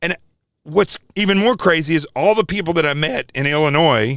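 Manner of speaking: voice cracking and breaking with upset. Speaking to listeners, really upset, voice cracking. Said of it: "my voice is cracking".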